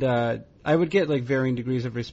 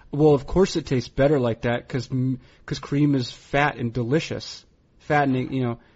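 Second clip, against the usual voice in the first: ordinary talk, nothing marked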